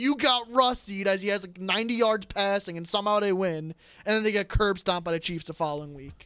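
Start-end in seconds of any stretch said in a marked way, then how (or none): 0.0-1.1 screamed out, high screaming yell. Predicting how the game ends, imitating Jerry screaming. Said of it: "Jerry starts screaming".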